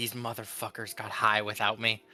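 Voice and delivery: muttered quietly under the breath. Voicing a character's only remark about the others, muttered under breath. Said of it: "the only thing Winnie says is under her breath".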